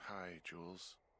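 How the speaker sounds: weary, worn-out, tired voice. Answering a call from Jules in the middle of the night, tired voice. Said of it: "you sound tired".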